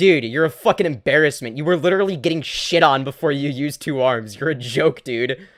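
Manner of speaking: goading, antagonizing, taunting put-down tone. Acting out what they would say to a rival: acting out an antagonizing taunt. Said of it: "I would say it in a more, like, antagonizing way".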